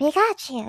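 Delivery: breathy, high, small voice, breathed out. Showing how the Pikachu voice should sound, breathy Pikachu voice. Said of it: "that sort of breathy range".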